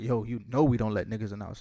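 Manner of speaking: ordinary talk, nothing marked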